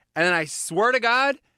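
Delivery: normal talking voice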